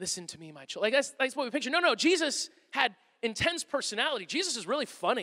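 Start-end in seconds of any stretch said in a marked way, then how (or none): 0.0-0.8 barely audible, very soft, ethereal whisper. Showing how people picture Jesus talking: Jesus in an ethereal whisper. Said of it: "like everything's sort of a whisper".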